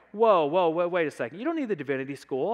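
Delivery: super defensive, loud push-back. Retelling how other students in the room reacted, imitating them mock-defensive. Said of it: "got super defensive".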